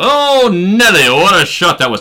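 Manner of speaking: put-on very high, loud old-school transatlantic announcer accent. Retelling how a St. Louis Cardinals announcer called a shot, old-school transatlantic accent. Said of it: "That that transatlantic accent".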